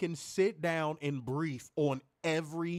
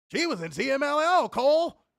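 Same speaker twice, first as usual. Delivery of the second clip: put-on very high, booming, very slow, loud enthusiasm; 10 semitones higher, 8 dB louder than usual. Imitating how a commentator recalls a small fact: imitating Werner's enthusiastic line. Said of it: "he'll say it like that".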